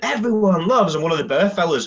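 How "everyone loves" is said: play-acted, bellowed, pitched-up shout on the mic. Retelling what a man shouted on the microphone, imitating someone shouting. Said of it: "He shouts out".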